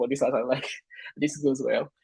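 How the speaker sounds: laughing while talking.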